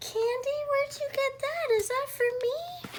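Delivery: put-on very high, squealing, gasping excited little-kid voice.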